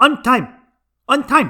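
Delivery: put-on Chinese accent, high and loud. Speaker quotes a man who looks at him, trying a Central American accent that comes out Chinese. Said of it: "I don't know why it keeps coming out Chinese".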